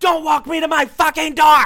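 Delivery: piercing, very high, very loud, shrill scream. After he opens her passenger door, she slams it shut, retelling her scream. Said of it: "she screams".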